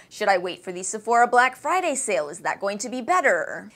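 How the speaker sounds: usual speaking voice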